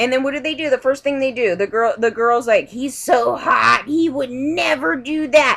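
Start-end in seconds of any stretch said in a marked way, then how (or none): 2.7-5.6 very slow, drawn-out delivery with every word dragged. Retelling what the girl at Red Cross said: imitating someone talking loudly. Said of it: "she's saying it really loud".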